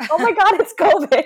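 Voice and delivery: very high, loud, shrieking scream. Retelling own reaction while watching an episode: imitating own screaming. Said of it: "screaming at the T V".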